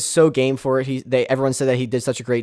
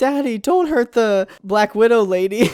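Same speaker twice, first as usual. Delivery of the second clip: put-on very high, slow, frightened little kid voice; 10 semitones higher than usual. Describing how a man's kids reacted to seeing him turn into the Hulk, imitating scared kids. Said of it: "Mark's kids were actually like scared".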